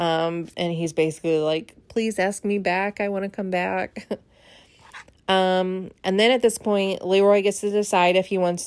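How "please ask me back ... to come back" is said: mock crying, tearful pleading tone. Retelling what he said in his final moments, imitating him crying. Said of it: "he's crying".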